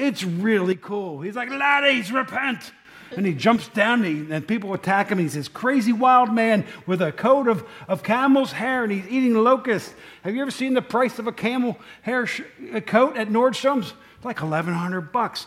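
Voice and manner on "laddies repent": put-on preaching delivery in a pitched-up Scottish accent. Act out John the Baptist preaching repentance in the film, as Charlton Heston with a Scottish accent. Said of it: "He plays John the Baptist with a Scottish accent".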